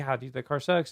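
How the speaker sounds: ordinary talk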